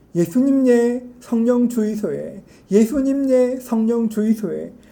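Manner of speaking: strong, thick, real-sounding Gyeongsang dialect. Retelling how a Kenyan student prayed at a student gathering: imitating real Gyeongsang dialect. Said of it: "아주 리얼한 경상도 사투리로 기도하고".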